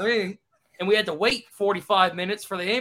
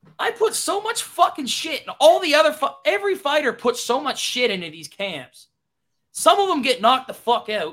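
high, raised, yelling rant; 5 semitones higher, 4 dB louder than usual. Speaker on a mic, entertaining everybody: yelling into the mic. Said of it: "I'm yelling in the mic".

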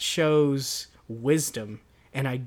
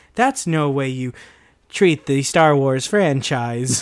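raised, put-on text-to-speech computer voice; 7 dB louder than usual. Describing a wished-for meme edit, doing a Microsoft computer voice. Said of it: "the computer voice being like".

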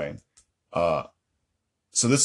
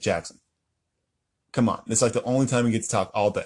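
ordinary talk

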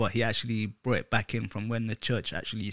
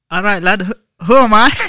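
loud, high, shrill, booming put-on Scottish accent; 10 semitones higher, 18 dB louder than usual. Trying out an accent, the speaker asks who he is: scottish accent. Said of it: "Scottish accent".

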